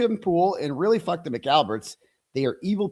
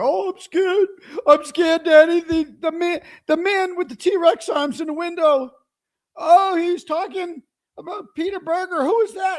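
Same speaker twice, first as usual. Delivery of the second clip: put-on mock crying voice, higher and louder; 13 semitones higher, 4 dB louder than usual. Mocking a rival with a scared whimpering act: mock crying Colin Albert voice. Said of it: "crying Colin Albert".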